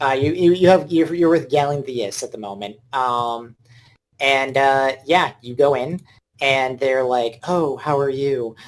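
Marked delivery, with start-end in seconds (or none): 7.5-8.6 sultry, seductive come-hither voice. Voicing a character who greets a player: seductive voice. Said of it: "with a seductive voice".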